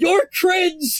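shrill, very high monstrous shout. Voicing a rainbow demon yelling from the horizon: yelling monster voice. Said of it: "It actually does yell".

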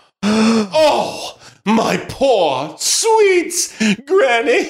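slow, tearful weeping through the words. A little girl learns her granny was eaten, crying. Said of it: "Don't cry, little girl".

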